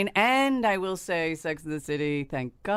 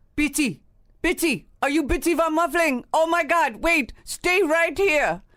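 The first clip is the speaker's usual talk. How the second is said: very high, loud, put-on Turkish accent queen voice; 11 semitones higher, 6 dB louder than usual. Egged on to do the accent, the speaker plays a Turkish queen, Turkish queen voice. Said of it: "Do a Turkish queen".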